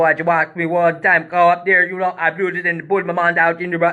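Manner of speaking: heavy put-on Jamaican patois accent, laid on thick. Retelling what a performer from Cleveland said before going on stage: imitating a thick Jamaican accent. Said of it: "he talk like that".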